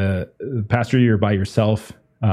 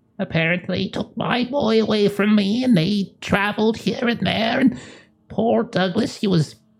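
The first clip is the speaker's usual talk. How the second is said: very high voice of a woman in her eighties; 12 semitones higher than usual. A mother in a role-play speaks about her son Douglas; elderly woman voice. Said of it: "She's older woman in her 80s".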